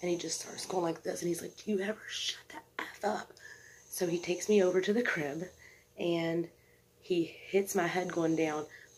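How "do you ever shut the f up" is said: put-on furious outburst, delivered as breathy whisper. Retelling what an aggravated man kept saying: imitating someone getting really mad. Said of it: "he's just going off".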